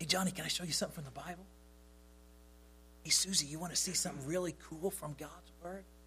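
hushed yet eager, quick, lively, excited voice. Demonstrating speaking exercise number four, soft but excited. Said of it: "speak softly but with an excited voice".

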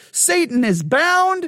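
high, sarcastic, put-on fake cheer. Describing the view that we live in the millennial kingdom now: mock sarcastic enthusiasm. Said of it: "I'm saying that a little bit sarcastically".

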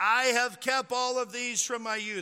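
mock proud, self-satisfied, loud, lofty arrogant tone. Speaker retells the young man answering Jesus, mock-arrogant boast. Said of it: "very arrogantly, proudly says".

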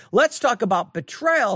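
plain

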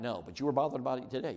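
normal talking voice

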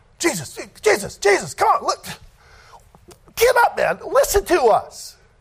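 very high, whiny, drawn-out nagging tone. Acting out the Pharisees pestering Jesus: imitating pestering Pharisees. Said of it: "That's what these Pharisees were".

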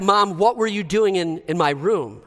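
mock annoyed, angry, irritated teenager snapping. Acting out a teenager snapping at mom about the room: snapping angrily. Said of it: "And you snap".

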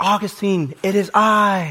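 put-on high, drawn-out, screamed calling voice. Retelling a story where a woman calls a man's name: imitating a woman screaming. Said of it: "She kept screaming at him".

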